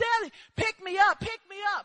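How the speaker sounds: put-on, tearful, crying, panicked, frantic voice. Retelling how your panicking son begged you, acting out his crying scream. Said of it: "he's starting to scream".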